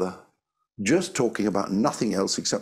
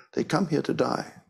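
put-on heavy Greek accent; 5 semitones higher than usual. Retelling what a woman said, repeating her words: imitating a heavy Greek accent. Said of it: "heavy Greek accent".

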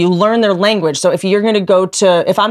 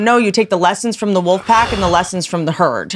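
usual speaking voice

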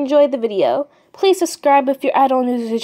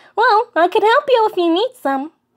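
fake-friendly voice, pitched up; 8 semitones higher than usual. Introducing himself to a human new to the underground, in a Flowey voice. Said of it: "Name's [name]. [name] the flower".

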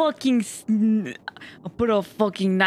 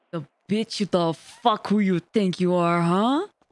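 slightly lower, deeper, more serious voice; 2 semitones lower than usual. Speaker practicing a voice with chat's advice: a little deeper than normal. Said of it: "A little bit deeper than normal".

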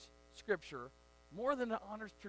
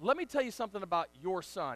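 mock hot-tempered, really angry, heated tone; 2 semitones lower than usual. Retelling what a man who followed them out said: imitating an angry man. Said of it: "And he said it really angry".

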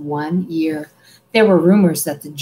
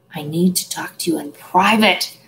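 quiet mumbling. On a departing train, a boy mutters to his two companions. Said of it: "Harry muttered".

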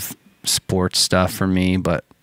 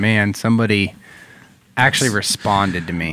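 ordinary talk, nothing marked

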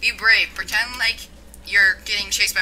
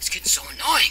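irritated, annoyed, fed-up game creature voice. Watching a game, voicing the creature annoyed by the player: imitating an annoyed creature. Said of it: "It's being really annoyed by you right now".

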